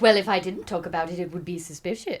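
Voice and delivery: good, put-on British accent. Quoting someone's excuse to the others: British accent. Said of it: "That's a good British accent".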